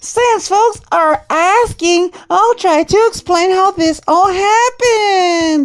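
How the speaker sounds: very high-pitched, catty, bitchy put-on voice. Reading someone's online post aloud, in a bitch voice. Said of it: "let's do this in bitch voice".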